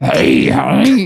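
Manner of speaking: put-on rough, gurgling, creaky old-lady rasp. Retelling a fairy tale, voicing the grandma: imitating a gargly grandma voice. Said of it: "Her grandma sounds real gargly that day".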